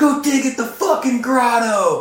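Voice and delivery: put-on, shrill, very high-pitched screeching yell. Recalling Foley chasing them out of the skate park: imitating Foley yelling. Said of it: "Like yelling at us".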